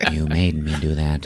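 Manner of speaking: deep voice, spoken softly. Talking about a film, quoting the killer's line as the killer in Cruising impression. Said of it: "that is what he sounds like".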